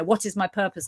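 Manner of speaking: plain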